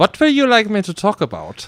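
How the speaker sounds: put-on German accent, very high and very loud. Asked to do it on the spot, German accent. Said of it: "Do your German accent".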